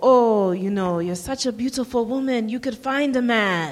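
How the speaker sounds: put-on Guyanese accent. Acting out what your traditional West Indian dad would say to you, in a kind of thick Guyanese accent. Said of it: "kind of thick Guyanese accent".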